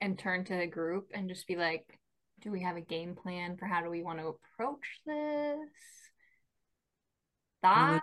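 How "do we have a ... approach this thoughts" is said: quiet, hushed, voice kept down. Turning to the group to ask about a game plan, speaking quietly. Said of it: "i want to keep my voice down".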